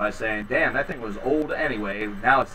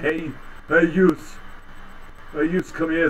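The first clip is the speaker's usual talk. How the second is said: silly mock mafia gangster voice; 5 semitones higher than usual. Joking about how their regional slang sounds, in a stupid mafia voice. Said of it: "Sounds like I'm part of some sort of, like, stupid mafia".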